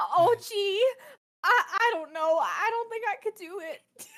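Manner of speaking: high, teary, slightly crying voice. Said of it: "I'm crying a little bit".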